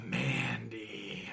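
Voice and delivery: sultry, breathy, sexy near-whisper. Recapping a wrestling segment, saying a wrestler's name: sexy voice. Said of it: "That's my sexiest voice".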